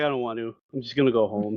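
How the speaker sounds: put-on nonchalant, offhand tone. Retelling an anime scene where a boy turns down an invitation: imitating a nonchalant refusal. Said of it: "so nonchalant about some of these things".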